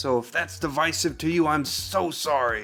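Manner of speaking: insincere, sarcastic voice. Explaining how he pronounces the brand name, with a sarcastic apology. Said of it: "that's kind of sarcastic".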